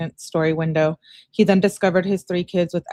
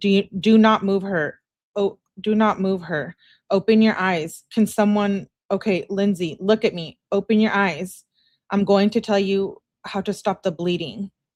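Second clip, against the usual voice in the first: plain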